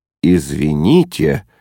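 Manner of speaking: dryly disconcerted. Narrator voicing a disconcerted father apologizing, dry and taken aback. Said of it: "сухо произнес обескураженный папа".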